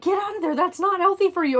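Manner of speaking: put-on very high, frantic, rushed, freaked-out yell. Retelling how he yelled at the car not to eat it: imitating him yelling. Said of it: "He yelled at the car".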